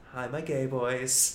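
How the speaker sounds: slow, sinister, serious delivery.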